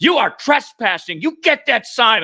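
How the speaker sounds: very high yelling, acted out. Retelling a woman ordering the speaker off her lawn, imitating someone yelling. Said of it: "she's still yelling at me".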